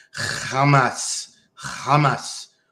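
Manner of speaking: guttural, phlegmy throat sound. Speaker asks Wesley if the impersonation is okay, with guttural throaty pronunciation. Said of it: "my impersonation ... you gotta say it with your throat".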